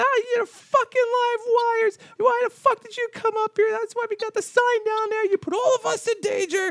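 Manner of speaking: very high, shrill, angry, furious cursing yell. Retelling how a woman came out cursing: imitating a woman yelling angrily. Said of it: "she starts yelling at me".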